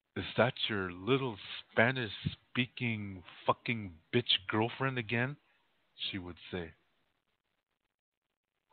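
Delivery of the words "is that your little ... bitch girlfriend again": normal talking voice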